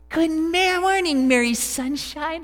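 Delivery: syrupy-sweet honeyed voice, very high and slow. Recalling mom coming in each morning to wake you, imitating her sweet honey voice. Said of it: "She'd had the sweetest honey voice".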